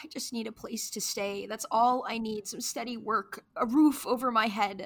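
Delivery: pleading voice, on the verge of crying. With nowhere to go, asking for steady work and a roof, near tears. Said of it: "Don't cry".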